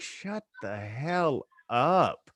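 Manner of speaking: very slow, stretched-out, drawn-out delivery. Imagining the wife upstairs reacting to him in the basement: imitating Eileen. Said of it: "my wife's sitting upstairs in the bedroom, like".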